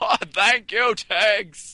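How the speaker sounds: very high loud ghost voice. Hosting a joke podcast of happy stories as requested: Jimmy Stewart's ghost voice. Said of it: "thanks, Jimmy's Ghost".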